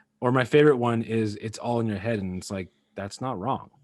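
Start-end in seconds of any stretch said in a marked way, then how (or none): none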